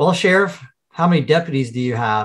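put-on dry, effortless delivery. Quoting a movie line to another speaker: imitating Bill Pullman's dry delivery. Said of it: "his delivery of the line is".

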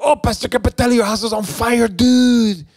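put-on acted-out shrill child scream, very high. A pastor retells an eleven-year-old running up the street to him: imitating a kid screaming. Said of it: "he's screaming to me".

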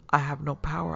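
plain reading voice

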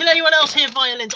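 normal talking voice

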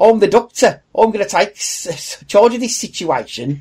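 put-on Birmingham accent. Showing how a doctor taking charge sounds in a Birmingham accent. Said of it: "You're still saying a bit like Barry off of his own pit".

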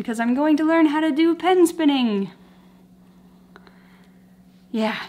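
out of breath, winded. Vlogger just back from running, talking to viewers out of breath. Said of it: "I'm out of breath".

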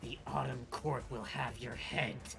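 speaking through gritted teeth. A wounded enemy snarls at the players as she heals, through clenched teeth. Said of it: "And through clenched teeth, she says".

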